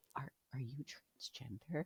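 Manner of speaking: imitated whispering. Retelling what the therapist asked: imitating someone whispering. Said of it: "whispered it and, like, leaned in".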